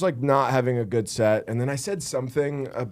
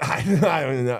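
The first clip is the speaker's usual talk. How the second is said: put-on drunk woman's voice. Retelling a woman's answer to a question: imitating a drunk woman. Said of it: "obviously trashed".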